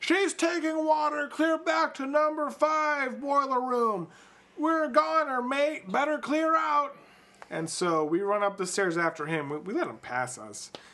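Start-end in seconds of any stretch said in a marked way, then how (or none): 0.0-6.9 acted frantic, very high-pitched, panicked yell. Retelling a man running at them as seawater rises, retelling his shouting. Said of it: "and he's shouting".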